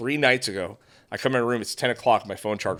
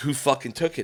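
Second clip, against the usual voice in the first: acted angry yelling, pitched higher; 3 semitones higher than usual. Retelling losing it on them over a missing charger: retelling losing it. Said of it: "losing it on them".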